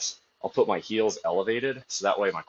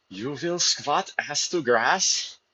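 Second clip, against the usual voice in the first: furious, angry German accent, pitched up; 7 semitones higher than usual. A streamer talking about squat depth, doing an angry german accent. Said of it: "picture the angry German accent".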